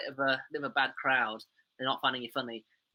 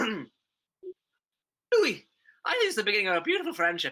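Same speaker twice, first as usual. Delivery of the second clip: put-on, sing-song, lilting Irish accent, pitched up; 8 semitones higher, 4 dB louder than usual. In an accent-guessing game, quoting a film line for Alfred, Irish accent. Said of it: "but the accent was Irish".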